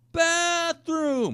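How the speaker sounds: play-acted shrill yell, pitched very high. Retelling trying to talk over loud music: imitating himself yelling. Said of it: "I just hate having to yell like that".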